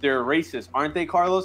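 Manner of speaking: usual speaking voice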